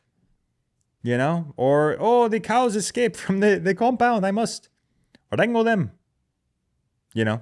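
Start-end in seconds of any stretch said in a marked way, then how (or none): 2.0-5.9 put-on high, terrible Indian-German accent. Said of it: "that was a terrible accent".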